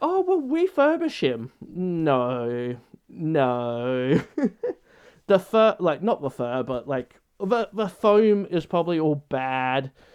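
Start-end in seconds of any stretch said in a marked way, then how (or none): 0.0-1.5 very high put-on eager, helpful voice. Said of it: "a lot of people that are like".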